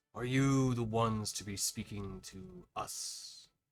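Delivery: reverberating, echoed delivery. Narrating a game scene, voicing the larger one who approaches, in an echoing voice. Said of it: "You hear a voice kind of echo out".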